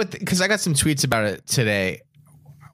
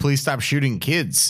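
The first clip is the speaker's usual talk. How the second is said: usual speaking voice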